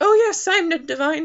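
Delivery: horrible put-on Irish accent, loud and high. Summarizing a story where an old man must pretend to be Ned, horrible Irish accent. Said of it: "please pardon my horrible Irish accent".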